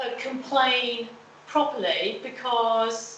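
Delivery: slow, careful, deliberate spelling-out.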